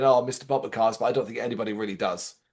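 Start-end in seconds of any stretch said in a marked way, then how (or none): none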